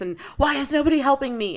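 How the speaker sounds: mock frantic, overwhelmed, very high panicked yelling. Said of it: "freaking out and I'm yelling at you".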